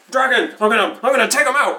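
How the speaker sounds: shrill, very high put-on yell. Playing a character waking from unconsciousness, shouting in character. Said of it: "I just start shouting".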